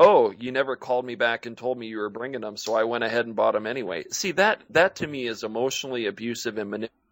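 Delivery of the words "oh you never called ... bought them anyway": ordinary delivery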